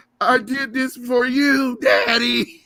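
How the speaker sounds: shrill, very high, loud, very slow, drawn-out cartoon voice. Acting out a Family Guy scene: Chris from Family Guy voice. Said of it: "that scene from Family Guy".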